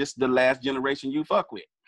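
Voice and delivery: ordinary delivery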